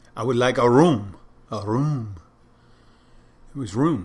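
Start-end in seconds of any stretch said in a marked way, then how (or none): 0.2-2.2 loud, outrageous, thickly exaggerated French accent. Quoting a film detective's line: Inspector Clouseau voice. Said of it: "Like Clouseau, Inspector Clouseau".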